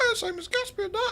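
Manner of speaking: exaggerated high squeak.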